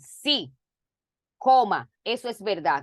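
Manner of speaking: "sí" followed by a long pause.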